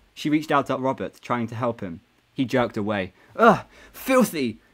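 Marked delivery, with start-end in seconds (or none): 3.4-4.6 words spat out hard, loud and high. Robert jerks away from Jessica's help, spitting the words out. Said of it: "he spat out".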